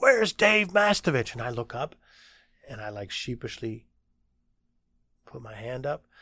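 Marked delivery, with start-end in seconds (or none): 0.0-1.3 put-on, very high, loud, all-out yell. Recounting a man calling out his name in his first class, retelling a yell. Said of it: "someone's yelling".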